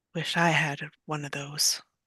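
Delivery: very quiet, low, half-whispered mutter. A character mutters a thought under her breath, barely above a half-whisper. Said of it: "in a barely above a whisper".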